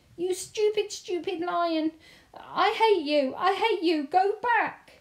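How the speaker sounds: shrill, very high, very loud, full-volume screaming yell. Bertie yells at a lion that keeps following him. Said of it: "Bertie yelled".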